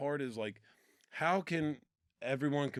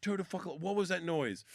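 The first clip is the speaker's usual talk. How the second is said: put-on angry drill sergeant voice, higher; 4 semitones higher than usual. Retelling how a drill sergeant overheard a noise: imitating a pissed-off drill sergeant. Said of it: "He came out all pissed off".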